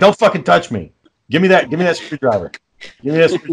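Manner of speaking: angry, fed-up, snapping voice. Retelling snapping at Sarah who offered help: retelling own angry snapping.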